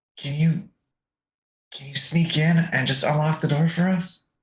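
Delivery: speaking in a whisper. Playing a character asking fleas to sneak in and unlock a door: whispering. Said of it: "I just whisper to my fleas".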